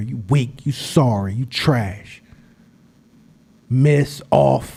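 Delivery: very slow, taunting whisper. Retelling trash talk to his son at free throw practice: imitating whispering in someone's ear. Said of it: "whisper in his ear".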